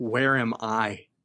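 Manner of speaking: barely audible, very faint, faraway voice. Narrating a scene, voicing a voice the others hear: very faint voice. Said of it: "you hear a very faint voice go".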